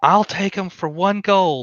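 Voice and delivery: pleasant call from a distance. A distant bidder calls out an offer to the auctioneer, in a soft, pleasant voice shout. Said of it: "a soft, pleasant voice shout".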